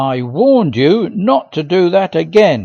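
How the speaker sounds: angry, through gritted teeth. A narrator, after falling over the cart, confronts him through gritted teeth. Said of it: "I said between gritted teeth".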